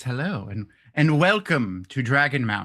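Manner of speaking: put-on formal, proper voice. Host welcoming listeners to dragonmount, in a put-on proper voice. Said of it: "That's my proper voice".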